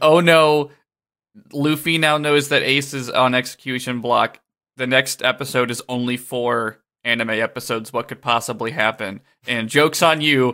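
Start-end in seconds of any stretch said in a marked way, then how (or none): none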